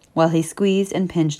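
ordinary delivery, nothing marked

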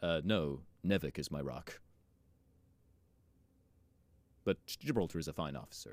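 quiet, dead flat, completely deadpan, no expression. Reading Bolt's reply aloud to the group, completely deadpan. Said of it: "completely deadpan".

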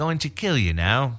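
put-on Queen's English accent. Joking about an alien that speaks English: Queen's English accent. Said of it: "the Queen's English".

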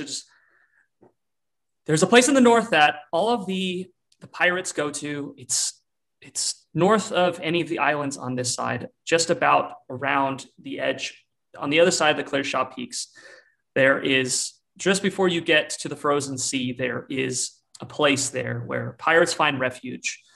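ordinary delivery

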